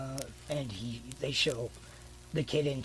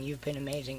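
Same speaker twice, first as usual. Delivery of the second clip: ordinary talk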